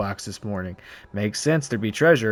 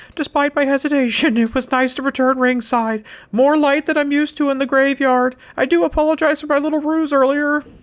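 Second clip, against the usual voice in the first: held-back, reserved character voice, pitched very high; 4 dB louder than usual. Reading in-game lines, trying the impression kind of reserved: Paul Bearer impression. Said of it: "do I wanna do the Paul Bearer impression".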